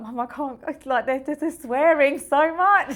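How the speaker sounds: play-acted crying, very loud, high tearful wail. Retelling a call to mum from a new job, imitating own past crying. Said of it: "I just remember crying".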